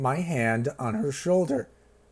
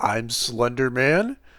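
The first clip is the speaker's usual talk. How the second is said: question-like rising lift on the word "Man"; 3 dB louder than usual. Showing up talk where every sentence sounds like a question. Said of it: "every sentence they say sounds like a question? Up talk".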